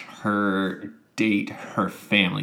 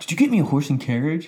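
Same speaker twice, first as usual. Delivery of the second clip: mock overexcited, thrilled, high-pitched tone; 6 semitones higher than usual. Retelling what a guy said about a horse and carriage: imitating an overexcited guy. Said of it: "I felt like he was overexcited on that".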